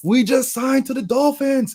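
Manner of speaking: high, slow, excited, hyped screaming. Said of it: "They're screaming out the sunroof".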